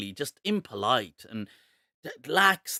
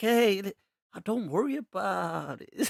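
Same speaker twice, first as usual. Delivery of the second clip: mock super relaxed voice, higher pitch; 5 semitones higher than usual. Retelling how a staff member in love now talks: imitating someone super relaxed. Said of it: "super relaxed".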